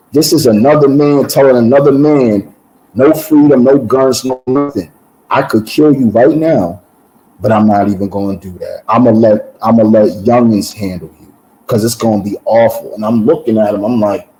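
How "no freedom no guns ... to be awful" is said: ordinary talk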